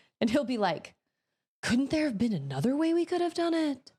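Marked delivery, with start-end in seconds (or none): 1.6-3.8 strangely inflected, weird, overdone inflection. Acting out what he will say, imitating his weird voice inflection. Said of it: "the inflection of his voice is weird".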